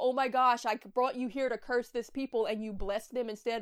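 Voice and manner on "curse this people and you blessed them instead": ordinary talk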